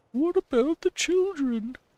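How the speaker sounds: bad woman's voice, pitched way up. Host voices a plea in a bad female voice. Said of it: "that's my bad female woman type voice".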